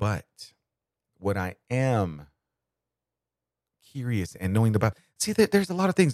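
speaking slowly and haltingly. Speaker addressing an arrest while gathering many thoughts: speaking slowly. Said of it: "I'm speaking slow".

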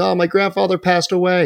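put-on weepy, high, sobbing little-kid voice. Imagining a grandchild at school telling of a death: imitating a crying grandchild. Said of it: "he's crying".

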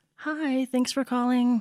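polite customer service voice. Showing the voice put on for answering calls at work, customer service voice. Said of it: "you got to put on your customer service".

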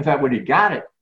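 normal talking voice

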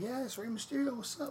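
put-on impression in a high, cheery voice.

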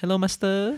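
sugary sweet, high, cutesy put-on voice. Describing how they greet you when you go in, cutesy put-on voice. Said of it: "they put this really cutesy voice".

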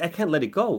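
plain

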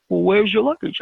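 put-on Israeli-accented speech. Retelling a car search, the speaker quotes one of the men searching: Israeli accent. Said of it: "in his Israeli accent".

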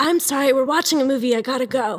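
held-back moans. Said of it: "I was trying not to moan".

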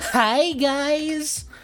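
very high, flamboyant voice. Speaker describes a range of voices, imitating a flamboyant high-school kid. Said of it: "the very flamboyant kid in your high school next door who's all like".

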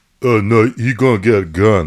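slow, loud, drawn-out caveman voice. Asked by another speaker to say what he'll do in the Spartan voice. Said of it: "in the Spartan voice".

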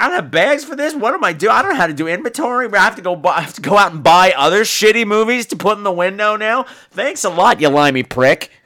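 put-on griping complaint. Imitating what the shop owner would say about the karate films: imitating a shop owner complaining. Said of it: "That's what he would say".

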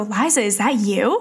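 put-on heavy French accent laid on thick, loudly calling out. Retelling a friend calling her name from behind in a cafe, Anthony's thick French accent. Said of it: "in like a thick French accent go".

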